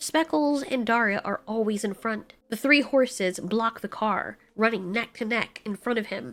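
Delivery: ordinary delivery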